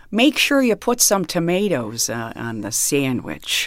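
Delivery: stock sing-song put-on Midwestern mom voice. Performer asked for a taste of their stock voices, stock Midwestern mom voice. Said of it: "Can you give us a taste of them?".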